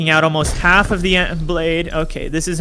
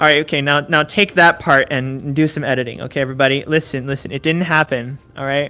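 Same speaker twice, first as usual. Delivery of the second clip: ordinary delivery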